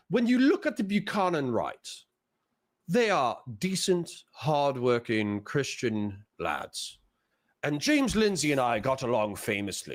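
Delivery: not-so-good put-on British accent. Quoting what a man implied, in a put-on British accent. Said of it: "I don't have a good British accent".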